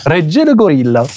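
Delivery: put-on Italian accent. Trying to say someone's nickname the right way, in an italian accent. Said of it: "il a fait l'accent italien".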